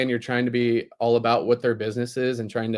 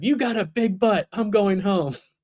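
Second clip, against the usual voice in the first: mock high-pitched angry little boy yell; 8 semitones higher than usual. Parent retelling what a little boy yelled at their daughter: imitating a boy yelling. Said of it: "he just yells at her".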